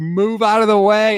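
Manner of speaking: high-pitched, loud, acted-out yelling. Speaker retelling an old movie scene, imitating Austin Powers yelling. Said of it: "he's just yelling at the guy".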